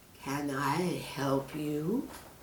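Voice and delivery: deep, caring voice, very slow and drawn out. Reading a story, the snake speaks to Peter in a deep, caring voice. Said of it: "Asked the snake in a deep, caring voice".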